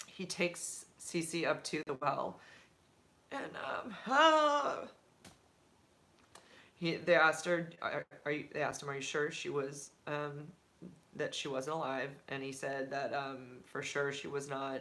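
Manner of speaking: choked up, holding back tears, lump in throat. Recounting a painful story while trying to block out the emotion, choked up. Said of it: "then I say that and I get a lump in my throat".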